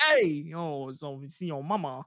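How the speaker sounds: mock Spanish accent, badly done. Joking about going to Puerto Rico, a bad attempt at Spanish. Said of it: "Was that your attempt of speaking Spanish?".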